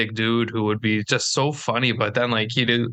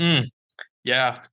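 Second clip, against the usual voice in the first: put-on, laid-back impression voice. Imitating a friend who just wants food, Jordan impression. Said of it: "that's my Jordan impression".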